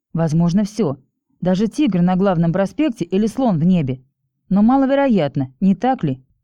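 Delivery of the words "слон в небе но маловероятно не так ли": ordinary delivery, nothing marked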